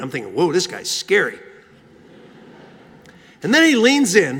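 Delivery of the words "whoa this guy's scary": plain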